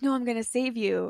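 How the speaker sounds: ordinary talk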